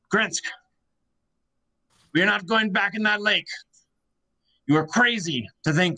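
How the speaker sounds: mild, worked-up, angry yelling outburst. A narrator voices a fisherman yelling at a dwarf over a table; yelling outburst. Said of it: "you start hearing kind of this yelling breakout".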